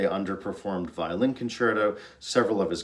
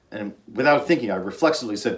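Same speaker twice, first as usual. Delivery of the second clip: ordinary talk, nothing marked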